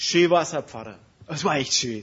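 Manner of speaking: loud, gushing, smug voice.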